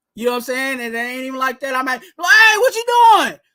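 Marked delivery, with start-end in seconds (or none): 2.0-3.3 high-pitched, loud hollering yell. Showing how he yells at the TV during games, retelling a high-pitched yell. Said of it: "that's where Twan getting the high voice".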